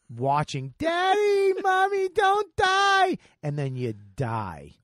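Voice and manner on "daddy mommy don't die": put-on shrill, piercing, very high, loud, drawn-out child's scream. Ranting at people who leave dog waste, the speaker mimics their kids, imitating children screaming. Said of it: "your children are screaming".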